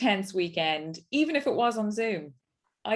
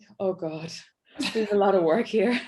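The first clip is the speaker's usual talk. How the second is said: put-on daunted, troubled, worried teacher voice; 3 dB louder than usual. Recalling the teacher seeing the class in downward dog: imitating a dismayed teacher. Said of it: "in your voice, there was this like".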